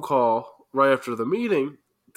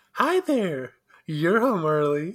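put-on female voice, pitched high; 5 semitones higher than usual. At the start of an improvised scene, character a greets someone coming home in a female voice. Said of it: "you're gonna have to use a female accent".

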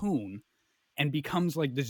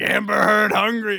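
rough, raw, very loud full-throated screaming; 6 semitones higher, 11 dB louder than usual. Retelling a dream of a creature chasing through woods: imitating a scream.

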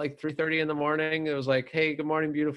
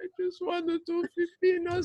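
put-on sad Swedish man voice, higher. Acting the Swedish guy sad after being yelled at: sad Swedish guy voice. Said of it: "He's like".

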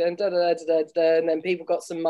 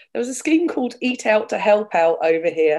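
laughing, unable to keep a straight face; 3 semitones higher, 4 dB louder than usual. Naming a government scheme while failing to keep a straight face: laughing while talking. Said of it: "I'm not gonna be able to say it with a straight face".

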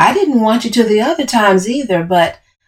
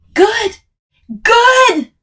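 very high-pitched, full-lung, top-of-the-lungs shout; 13 semitones higher than usual. The narrator yells back at Camille after she roars, shouting at top of lungs. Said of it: "I'd shouted at the top of my lungs".

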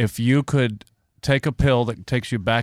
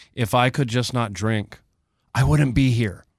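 normal talking voice

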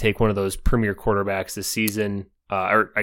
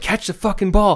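put-on very high-pitched, shrill screaming; 10 semitones higher than usual. Retelling how a quarterback reacted to the rookies: imitating Aaron Rodgers screaming. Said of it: "screaming at these rookies".

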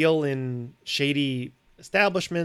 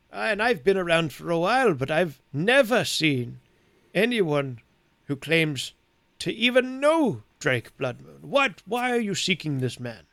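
put-on very old man voice, around eighty-seven; 3 semitones higher than usual. Voicing an eighty-seven-year-old who questions a young man: eighty-seven-year-old man voice. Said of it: "I'm eighty-seven years old, young man".

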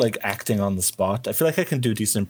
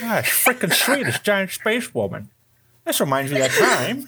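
very high, swooping, sing-song cartoon dad voice; 11 semitones higher than usual. Asked to read lines in character as Peter before a review: Peter the family guy voice. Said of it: "if maybe Peter reads any lines".

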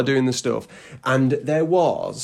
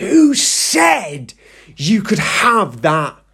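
mock screaming scolding, slow, very drawn out; 4 semitones higher than usual. Recounting a school trip, imitating Miss Brooks screaming at the children. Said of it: "she starts screaming".

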